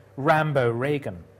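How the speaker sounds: normal talking voice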